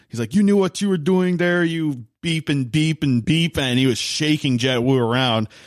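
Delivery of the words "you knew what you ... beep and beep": put-on French accent, yelling, higher-pitched. Retelling a practice fight, a player grabbing another by the collar: imitating Arsenault yelling in French accent. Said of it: "yelling with his French accent".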